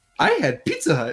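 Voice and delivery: mock cheeriest, bright, whimsical delivery. Retelling own reply after coming back: imitating own cheeriest whimsical voice. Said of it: "the cheeriest, whimsical voice ever in my life".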